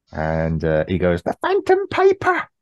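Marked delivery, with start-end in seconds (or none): 1.2-2.4 put-on crying voice, pitched much higher. Recapping how an episode ends, Harry's extremely high-pitched cry. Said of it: "An extremely high pitch".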